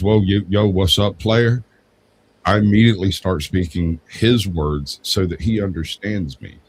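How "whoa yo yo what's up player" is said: South Atlanta street slang. Speaker imitates his buddy from South Atlanta calling him, imitating buddy's South Atlanta slang. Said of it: "my buddy from South Atlanta calls me, when he goes".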